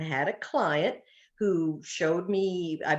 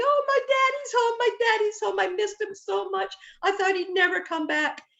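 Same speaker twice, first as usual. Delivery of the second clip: whiny, crying, very high-pitched dog voice; 3 dB louder than usual. Voicing the dog as it hears its owner come home: voicing a whining, crying dog. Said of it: "he's whining and he's crying".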